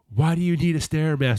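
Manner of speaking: mock exasperated yelling. Speaker recounts a movie scene where a husband yells at his wife, retelling an exasperated yell. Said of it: "yelling at his wife about the Stairmaster".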